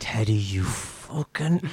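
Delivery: soft, grumbled mutter under the breath. Finding the mushrooms outside interfered with, muttering at Teddy under the breath. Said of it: "I just mutter under my breath".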